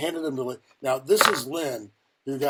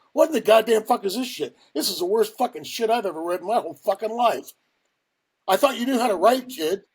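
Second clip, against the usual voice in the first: high-pitched, bawling yell; 8 semitones higher, 4 dB louder than usual. Retelling how a man reacted to their writing, imitating him yelling. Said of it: "He's yelling at me".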